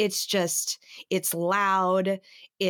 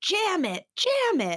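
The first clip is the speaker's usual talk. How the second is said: mock shrill, very high, drawn-out little-kid scream; 12 semitones higher than usual. Retelling a child at fireworks: imitating a child screaming. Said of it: "I hear her sitting next to me screaming".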